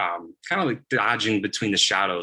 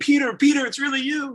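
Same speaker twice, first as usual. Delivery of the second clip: play-acted, very high, thrilled, excited shouting; 4 dB louder than usual. Telling a story as Peter, voicing the believers who run out, acting out an excited shout. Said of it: "they're shouting".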